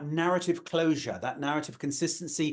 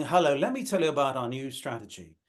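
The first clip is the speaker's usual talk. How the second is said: put-on bored voice, much lower; 3 semitones lower than usual. Coach describing people in presentation training, imitating a bored presenter. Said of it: "they're bored".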